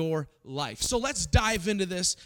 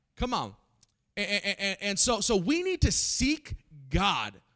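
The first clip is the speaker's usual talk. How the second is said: ordinary talk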